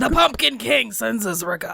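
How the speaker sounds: bad put-on British accent, not quite landing. Voicing a character's message in a rpg scene: attempted british accent. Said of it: "I was trying for a British accent".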